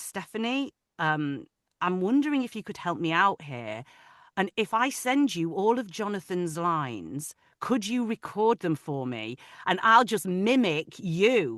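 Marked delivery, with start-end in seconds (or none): none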